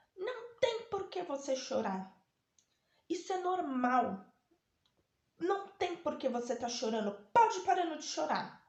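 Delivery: loud, high yelling shout. Retelling how a doctor scolded a crying patient: imitating a doctor yelling.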